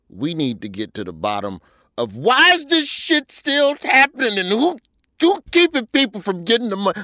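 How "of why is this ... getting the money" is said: loud, raised voice, rising yell. Speaking to the ladies before a break, but raising your voice at politicians, yelling. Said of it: "I'm sorry for yelling".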